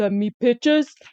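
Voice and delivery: creepy, level, flat, unsettling monotone drone. Retelling what a man told a woman to send him, mock creepy monotone. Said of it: "in the creepy monotone voice".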